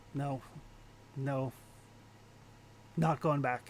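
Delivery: muttering under breath. Playing a character who refuses to go back, muttering under her breath. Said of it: "she's just muttering under her breath".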